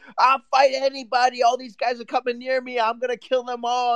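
acted, loud, high-pitched shouting rant. Retelling how a man stood outside the club yelling into the mic, imitating someone yelling. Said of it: "yelling into the mic".

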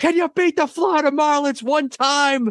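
mock shrill, very high yelled rant. Recall a famous rant after the Giants lost to the Marlins, imitating Mad Dog Russo yelling. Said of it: "And he's yelling".

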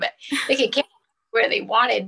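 pushing on rushed while close to crying. A parent talking about their children carrying their deployed dad's picture, on the verge of tears. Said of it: "I'm going to start crying".

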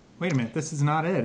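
normal talking voice

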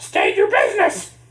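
very high, loud put-on chicken boy cartoon villain voice. Voicing the chicken boy as it challenges a newcomer: chicken boy character voice. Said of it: "I'm doing an impression of the chicken boy".

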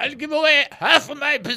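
put-on Yiddish accent on whole line, high and quick. Trivia host voicing the quote before asking who said it: Yiddish-style accent. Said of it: "That's a good accent".

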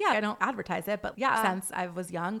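ordinary talk, nothing marked

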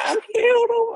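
mock yelling. Acting out how the healed man just yelled his cry, imitating a yell. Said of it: "He didn't come just reverent".

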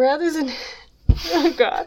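words broken up by giggles and laughter. Trying to read a passage aloud, laughing while talking. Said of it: "'cause I'm laughing too hard".

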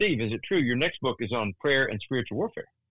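normal talking voice

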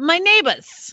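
"neighbors" said without r. Imitating Lorene's speech with no R sound: Lorene's R-less accent. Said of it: "There's no R".

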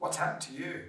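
put-on high-pitched Brummie, Birmingham accent. Telling a conversion story, the speaker quotes Carol's reaction at home: imitating Carol's Birmingham accent. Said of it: "in her Birmingham accent".

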